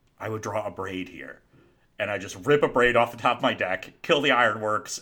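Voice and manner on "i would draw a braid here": hushed whispered aside. Retelling what another player whispered into his ear mid-game, whispering. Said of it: "literally whispers into my ear".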